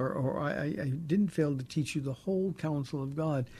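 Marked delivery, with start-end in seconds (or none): none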